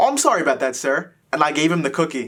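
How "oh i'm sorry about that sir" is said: ordinary talk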